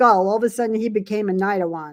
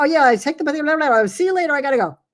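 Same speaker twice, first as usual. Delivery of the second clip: very fast, pitched-up, barely understandable babble; 6 semitones higher than usual. Imitating a King of Wands type who rushes off: imitating someone talking very fast. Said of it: "might talk so fast you can't even understand".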